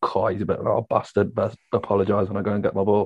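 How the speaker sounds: normal talking voice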